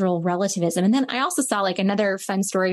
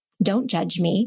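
put-on child voice, in all seriousness. Retelling a little girl's reply to her teacher: imitating a child in all seriousness. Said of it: "she looks up at me with all seriousness and she goes".

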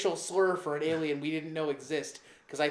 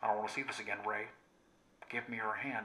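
low, put-on movie-villain voice; 6 semitones lower, 8 dB quieter than usual. Speaker mocks Star Wars villains who talk this way; Star Wars villain voice. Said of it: "another villain that talks like this".

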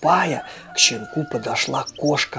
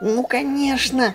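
thrilled, overjoyed, very high-pitched voice; 11 semitones higher than usual. A puppy answers the cat's suggestion about what dog he'll be, overjoyed. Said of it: "обрадовался щенок".

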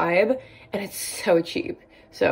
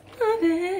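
voice cracking and breaking very high; 12 semitones higher than usual. Going through beauty favorites and praising a brown color, voice cracking. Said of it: "My voice cracked".

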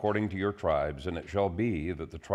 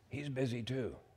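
put-on high, hushed, half-whispered little boy voice; 5 semitones higher, 10 dB quieter than usual. Telling a joke, voicing a little boy on the phone: imitating a half-whispering little boy. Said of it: "still whispering".

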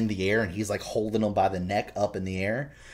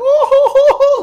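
mock, very high, very loud, drawn-out taunting fake sob; 18 dB louder than usual. Retelling a movie scene, imitating Pennywise mocking a crying kid. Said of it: "mocking him".

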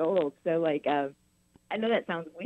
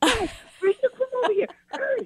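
put-on very high-pitched shouting; 4 dB louder than usual. A mother acts out yelling at her boys, retelling a yell at kids. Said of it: "yelling at the boys".

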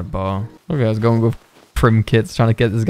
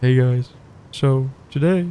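very slow voice, every word drawn out; 2 semitones higher than usual. Joking with a teammate while playing, imitating Spoon Kid. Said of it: "we gotta speak like Spoon Kid now".

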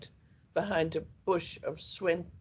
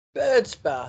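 loud, raised, proud, triumphant, victorious voice; 2 semitones higher, 10 dB louder than usual. Narrator reads the sister finally coming up with a name, triumphant. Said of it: "she said triumphantly".

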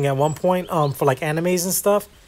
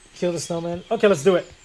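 normal talking voice

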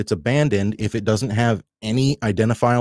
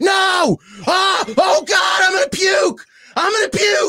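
mock scream at top of lungs, much higher, slower. Recounting a fast drive up a hill, the speaker acts out the passenger screaming at the top of his lungs. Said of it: "he's just screaming at the top of his lungs".

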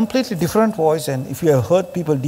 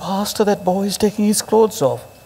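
put-on whisper, higher; 4 semitones higher than usual. Retelling what an intercessor came and said: imitating a whisper. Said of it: "come and whisper to me".

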